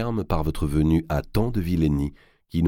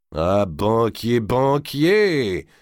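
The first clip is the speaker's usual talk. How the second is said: abrupt exclaiming, higher pitch; 6 semitones higher than usual. A character cries out to the banker who just gave him money, exclaiming with a big smile. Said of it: "s'écria D'Artois avec un grand sourire".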